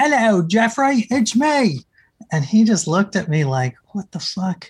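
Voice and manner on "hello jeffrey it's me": high, bad fake Australian accent, nearly leprechaun-like. Retelling walking up to jeffrey while posing as someone else: fake australian accent. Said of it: "in my fake Australian accent".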